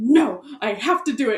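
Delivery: panicked outburst. Telling about a phone call with their mom, retelling freaking out. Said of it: "I was freaking out about something".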